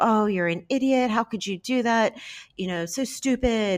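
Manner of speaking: stressed screaming, high. Giving an example of a stressed mom screaming at her seven-year-old, imitating a mother screaming. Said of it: "she's screaming at you".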